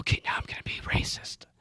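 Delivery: very quiet whisper, under the breath. Retelling what gets said under a drop ceiling, imitating own whisper. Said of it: "whispering when I'm like".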